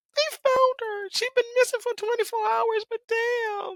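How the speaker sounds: crying through the words, very high. Recapping a rescue scene, holding back tears: crying while talking. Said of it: "Why am I crying?".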